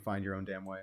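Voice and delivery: ordinary talk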